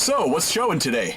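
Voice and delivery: put-on American accent. Acting out buying movie tickets, in a put-on American accent. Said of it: "Why do I keep doing an American accent?".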